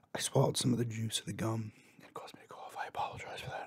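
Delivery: speaking in a whisper. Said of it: "I don't know why I'm whispering now".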